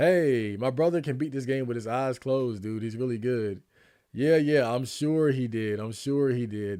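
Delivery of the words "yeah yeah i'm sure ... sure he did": slow, drawn-out, mocking sarcasm. Answering a claim about a brother beating the game: sarcastic. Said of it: "That's what you call sarcasm".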